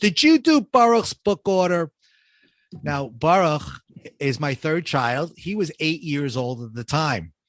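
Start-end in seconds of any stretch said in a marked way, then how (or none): 0.0-1.9 loud, high-pitched yell. Retelling how his wife yelled down from the second floor, imitating wife yelling. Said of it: "my wife yells down to me".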